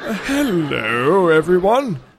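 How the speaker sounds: polished, flawless British accent, drawn out. Speaker claims they'd be an epic guest, then shows off a flawless british accent. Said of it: "I could speak in a flawless British accent".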